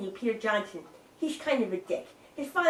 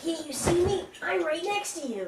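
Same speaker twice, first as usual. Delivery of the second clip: high, small cartoon-guy voice; 5 semitones higher than usual. Trying out character voices with others, little guy from She-Ra voice. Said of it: "it's like the little guy from the end of uh".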